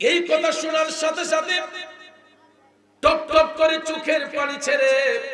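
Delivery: rising, high, loud, preacher-style wail.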